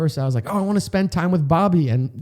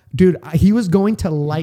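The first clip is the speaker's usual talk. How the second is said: ordinary talk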